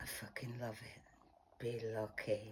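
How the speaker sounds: really husky, very soft, low voice. Asked to say the phrase again, now in a really husky voice. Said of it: "Now say it in a really husky voice".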